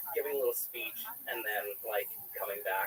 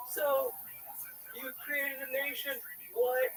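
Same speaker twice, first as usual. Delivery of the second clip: mock very high, slow, drawn-out shout. Recalling a trip, retelling yelling a question in a man's ear. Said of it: "I'm like yelling it in this dude's ear".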